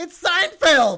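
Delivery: crazy over-the-top yell, high and loud. Opening the podcast by shouting the show's name: Howard Dean yell. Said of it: "I did, like, a Howard Dean yell there".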